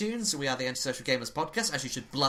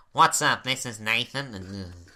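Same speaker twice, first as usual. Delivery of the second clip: exaggerated nasal voice with slow drawl; 2 semitones lower, 4 dB louder than usual. Speaker shows the other how to do an impression of him, exaggerated nasal voice. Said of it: "here's how you do a Nathan impression".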